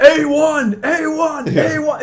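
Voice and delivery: mock very slow, high, drawn-out yell. Retelling how Ultraman acts in a fight, imitating Ultraman yelling. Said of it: "he's, like, yelling".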